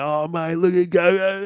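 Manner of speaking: very slow, high, stretched teasing through laughter. Retelling how the boat crew reacted to the snot: imitating someone laughing while talking. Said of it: "They all busted out laughing".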